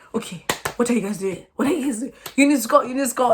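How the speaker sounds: put-on yelling. Showing how the speaker acts watching a football match, retelling own match yelling. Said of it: "I would just be like, I'm like this".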